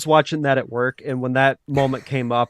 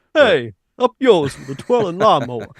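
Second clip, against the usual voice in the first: fake Brooklyn accent, much higher; 4 semitones higher than usual. Suggesting a line to try on somebody for their reaction, put-on Brooklyn accent. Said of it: "why do you have a Brooklyn accent?".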